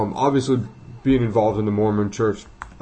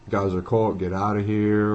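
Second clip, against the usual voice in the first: ordinary delivery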